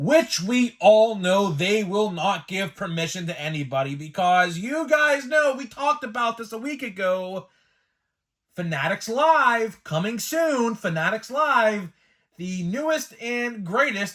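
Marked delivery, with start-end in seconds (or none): 8.6-14.1 tongue-in-cheek, sarcastic delivery. Announcing a new online card-breaking service: sarcastic. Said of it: "I'm saying that sarcastically".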